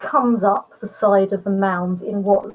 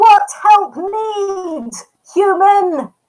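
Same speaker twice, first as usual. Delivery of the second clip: very high, loud yell with need drawn out; 11 semitones higher, 5 dB louder than usual. Narrator voices the big beastie answering a player who yelled to it, yelling up. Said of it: "And it yells up at you".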